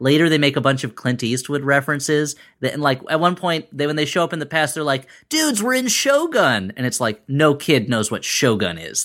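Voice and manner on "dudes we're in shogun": very high, slow, drawn-out, cartoonish delivery. Quoting the turtles arriving in the past: Teenage Mutant Ninja Turtle voice. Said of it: "had a killer Teenage Mutant Ninja Turtle voice there".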